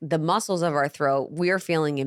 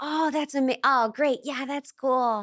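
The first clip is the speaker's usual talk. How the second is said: fake nice friendly voice, much higher pitch; 10 semitones higher than usual. Showing how people sound when trying to seem nice, in a fake nice friendly voice. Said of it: "I'm trying to get you to think I'm nice and warm and friendly".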